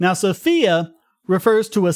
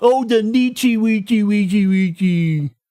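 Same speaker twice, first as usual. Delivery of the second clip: slow, mocking, babyish put-on baby talk. Complaining about how people mispronounce nietzsche, mocking it in a baby-talk voice. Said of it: "sounds like baby talk".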